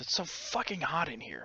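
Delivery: grumbling, muttered under the breath. Playing a character complaining about the heat: muttering under breath. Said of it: "I'm just gonna mutter under my breath".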